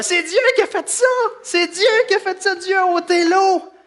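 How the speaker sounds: put-on Québécois accent. Retelling what his two little boys said before the show, Québécois accent. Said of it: "avec leur petit accent québécois".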